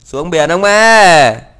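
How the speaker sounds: loud, slow, drawn-out calling voice.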